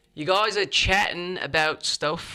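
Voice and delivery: best-effort British accent. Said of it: "my, uh, best British accent".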